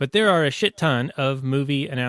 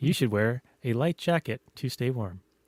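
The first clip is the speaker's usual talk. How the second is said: put-on voice assistant voice, quieter; 5 dB quieter than usual. Answering a question in an AI assistant voice, Siri voice. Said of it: "a non-male version of Siri or Alexa".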